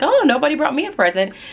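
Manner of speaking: high, joking, teasing mock complaint. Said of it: "I just joked at the end".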